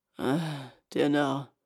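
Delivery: grumbling, muttered. Narrator reading a story, the ogre lying back down: grumbling. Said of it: "brummte der Menschenfresser".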